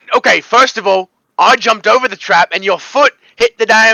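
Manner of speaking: put-on Australian accent, in character. Voicing a character arguing with another over a set-off trap: Australian accent.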